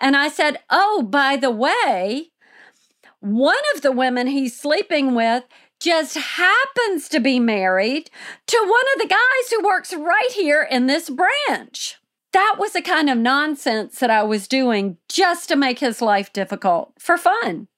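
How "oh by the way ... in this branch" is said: voice escalating throughout, drawn-out delivery. Retelling a scene at the bank, retelling talking very loudly. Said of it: "my voice is now escalating and I'm talking very loudly".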